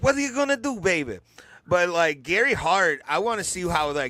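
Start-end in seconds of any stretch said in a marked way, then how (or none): 0.0-1.2 high, slangy patter, voice pushed up. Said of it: "he would talk like this, baby".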